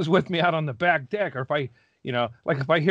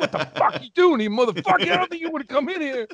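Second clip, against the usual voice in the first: put-on pitched-way-up, very high seventy-year-old man voice; 10 semitones higher than usual.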